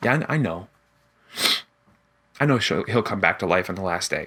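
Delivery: mock slightly sad voice. Retelling what she said before Jesus grabs her, with put-on sadness. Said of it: "hear in her voice a little bit of sadness".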